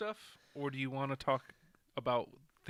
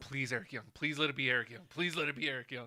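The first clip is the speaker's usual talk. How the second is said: ordinary talk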